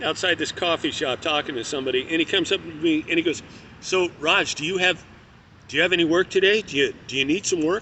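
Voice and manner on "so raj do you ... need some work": plain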